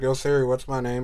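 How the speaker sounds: ordinary talk, nothing marked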